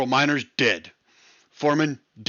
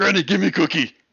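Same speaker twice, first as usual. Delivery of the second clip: put-on monster voice, higher pitch; 6 semitones higher, 3 dB louder than usual. In a group scene, staying in character while addressing Granny: Cookie Monster voice. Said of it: "It's total Cookie Monster".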